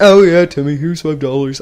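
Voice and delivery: woman's voice that comes out oddly like a man. Acting out a mother answering her child: playing a mom, sounding like a man. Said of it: "I don't know why I sound like a man".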